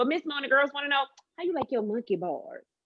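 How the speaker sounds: quick, high, seductive talk-radio host voice. A radio host shows the audience how she asks callers, put-on sexy radio voice. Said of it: "in a sexy tone voice".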